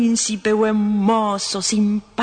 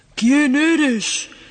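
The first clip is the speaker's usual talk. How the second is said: furious, stormy, angry, high-pitched voice; 5 semitones higher than usual. Narrator voicing the furious emperor in a story, roaring thunderous voice. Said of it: "rugió el emperador con voz de trueno".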